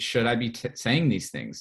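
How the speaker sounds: usual speaking voice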